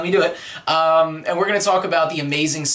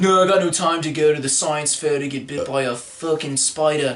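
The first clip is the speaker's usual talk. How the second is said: put-on voice, almost Australian accent. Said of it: "Almost Australian".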